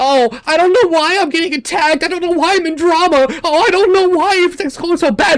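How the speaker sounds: mock whiny, nagging grumble. Imitating people who ignored a warning, mocking someone whining. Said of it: "you're gonna bitch about it".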